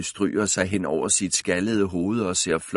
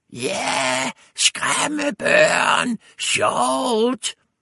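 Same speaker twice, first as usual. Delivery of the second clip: piercing, agitated, excited, very high, slow and drawn out; 3 dB louder than usual. A voice from above answers the shouting child; shrill, excited voice. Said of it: "en skinger ophidset stemme".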